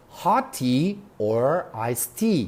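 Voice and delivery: pitch rises on "hot tea", falls on "iced tea". English lesson on choice questions, rise on hot tea, fall on iced tea. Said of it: "تۆنی دەنگم لەرەلەری دەنگم بەرز بوو دواتر نزم بۆ".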